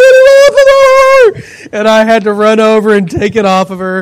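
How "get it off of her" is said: very high, shrill scream, stretched long. Retelling how a woman reacted on the couch, imitating someone screaming. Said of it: "she's screaming like".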